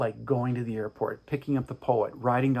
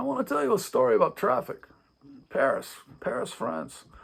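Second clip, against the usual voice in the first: put-on Serbian accent, much higher pitch; 12 semitones higher than usual. Retelling a man's words during a car ride stuck in traffic, imitating his Serbian accent. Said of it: "I'm trying to imitate his accent".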